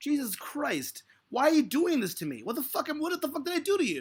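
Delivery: genuinely angry, really mad complaining outburst. Complaining that others are blowing it out of proportion: really mad. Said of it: "I'm really mad right now".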